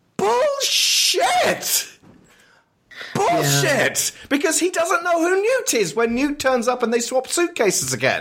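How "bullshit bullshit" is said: mock, very high-pitched, mild yell. Reacting to a character's claim about erased memories, screaming. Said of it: "I'm screaming there".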